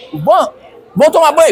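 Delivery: harried, rushed, pressed-for-time tone. Retelling how the children are rushed to the bath: imitating a hurried order. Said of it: "eu tô com muita pressa".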